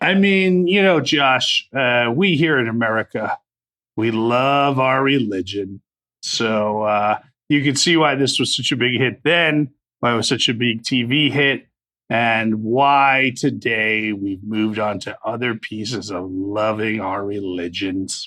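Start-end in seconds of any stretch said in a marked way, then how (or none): 2.1-18.3 dry, ironic, tongue-in-cheek, sarcastic delivery. Commenting to another speaker on a film's past popularity: sarcastic.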